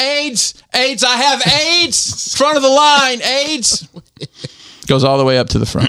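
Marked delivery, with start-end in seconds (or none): 0.0-3.9 shrill, very high, drawn-out screaming. Retelling a TV scene, acting out a shirtless character's line: retelling a scream. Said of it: "And he's screaming".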